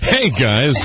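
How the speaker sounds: cheerful, happy put-on voice. Greeting after being asked about sounding tired: happy voice. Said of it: "Let me put on my happy voice".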